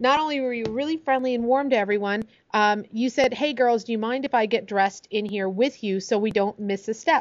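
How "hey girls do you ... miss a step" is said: ordinary delivery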